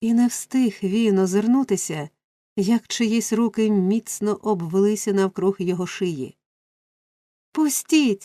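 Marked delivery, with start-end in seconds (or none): 7.5-8.3 abrupt, high, sudden crying out. Oliver, seized from behind in a stranger's embrace, cries out while breaking free. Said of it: "скрикнув Олівер".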